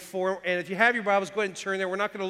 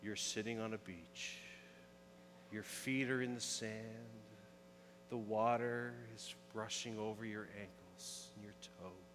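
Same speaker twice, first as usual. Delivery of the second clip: very soft, hushed, gentle, soothing voice; 10 semitones lower, 18 dB quieter than usual. Retelling how he talked to her to calm her down: retelling a soothing voice. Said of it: "soothing voice".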